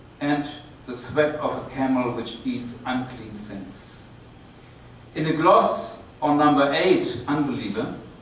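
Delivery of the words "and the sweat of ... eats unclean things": plain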